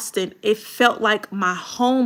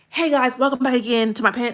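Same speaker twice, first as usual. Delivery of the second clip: peppy, in-your-face, upbeat and rushed delivery; 3 semitones higher than usual. Imitating a creator's intro while critiquing a video: imitating a loud upbeat intro. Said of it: "He was very loud".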